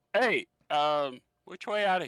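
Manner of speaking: loud, called-out yell. Ignored by a man at his workbench, a player's character calls out to him, yelling. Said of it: "I'm just gonna yell".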